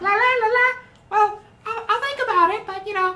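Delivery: very high, loud, squeaky puppet voice. Speaker playing Elmo answering a plea for help, in an Elmo voice. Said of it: "you have to use that voice now".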